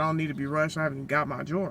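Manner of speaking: ordinary talk, nothing marked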